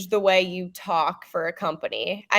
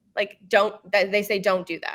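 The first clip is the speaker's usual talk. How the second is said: usual speaking voice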